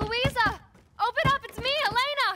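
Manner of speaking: loud, high shouting. Outside with a wounded father, calling to someone inside the house: shouting. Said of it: "Stop shouting".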